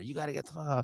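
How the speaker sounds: mock very quiet, muted, angry voice. Retelling telling off a woman outside the business: imitating own yelling. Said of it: "he hears me yelling at this lady".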